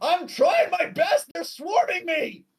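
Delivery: wizard voice screaming, shrill and very high. Voicing a wizard under attack by a swarm: wizard screaming.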